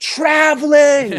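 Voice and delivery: pretend screaming. Acting out rooting for the other team at a game: pretend screaming at the referee. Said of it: "just start screaming, like".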